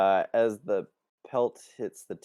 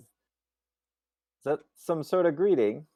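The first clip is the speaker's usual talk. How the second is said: puzzled, wondering, quizzical higher tone; 9 semitones higher than usual. A game narrator voices a character looking at Drakaro, quizzical. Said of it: "she just kind of looks quizzically at Drakaro and says".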